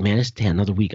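ordinary delivery

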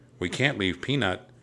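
plain reading voice

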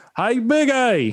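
screaming, high and slow.

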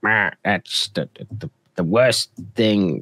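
bad grumpy complainer voice, slow and unimpressed. Imitating someone unimpressed by the best news: bad impression of a grumpy fan. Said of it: "I'm doing a really bad impression".

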